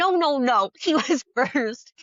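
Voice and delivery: firm, pressing, insistent, repeated yelled protest. Retelling how a woman yelled at a man who cut in line, retelling a yell. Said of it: "she started yelling at the other guy".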